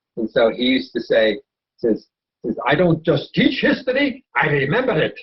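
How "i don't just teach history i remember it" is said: put-on thick Polish accent, grand, theatrical, swooping. Remembering a history teacher, quoting him in a heavy Polish accent, dramatic. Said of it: "he had a heavy Polish accent in a very dramatic manner".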